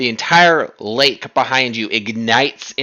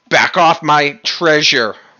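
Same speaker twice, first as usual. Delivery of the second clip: furious, bellowing dragon voice; 3 semitones higher, 3 dB louder than usual. Voicing a dragon that lands before the party: dragon yelling. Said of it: "it yells at you".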